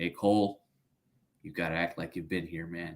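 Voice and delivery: put-on monotone voice. Retelling what he told Cole while others were yelling so loud, do a monotone Bill Belichick voice. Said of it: "you know his voice is very monotone".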